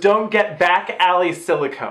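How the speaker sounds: normal talking voice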